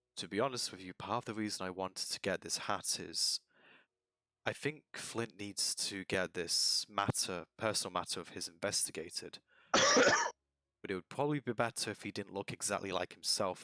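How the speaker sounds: low confiding undertone. Player voicing the character Nargax, confiding about Flint: Nargax, lowered voice. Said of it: "Nargax will lower his voice and say".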